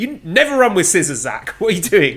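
shrill, swooping screaming. Speaker retells screaming at the computer during a match, retelling own screaming. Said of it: "I was screaming at my computer".

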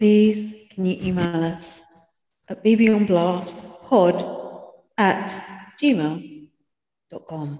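very slow, drawn-out airline announcer voice. Podcast host asking listeners to email the show, flight announcement voice. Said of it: "like you're doing the last passenger's announcement on a flight".

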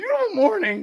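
nervous, very high, loud voice crack. Retelling a nervous walk to a Lyft, acting out a nervous voice crack. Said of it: "My voice cracks".

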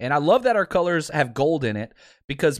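normal talking voice

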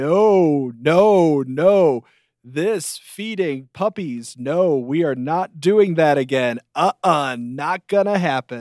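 mock-defensive, half-joking, with drawn-out "no". Recounting a man opening his shirt before an audience: retelling a half-joking protest. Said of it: "he sort of half jokingly".

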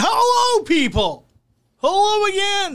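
high, playful yelling. Podcast host greeting listeners after an ad: yelling. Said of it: "Why are you yelling?".

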